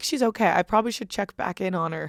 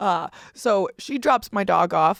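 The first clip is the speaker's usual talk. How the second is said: ordinary talk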